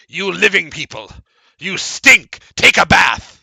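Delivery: loud monster voice of a ghoul creature. Narrating a game, the storyteller voices a creature mocking the living: creature voice. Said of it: "It nods. Goes".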